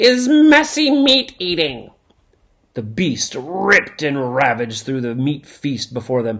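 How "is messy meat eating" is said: drawn-out, very high, slow headmaster-style snarl. The headmaster announcing the second lesson to his pupils, snarling. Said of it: "the headmaster snarled".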